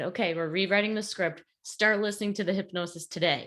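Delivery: ordinary delivery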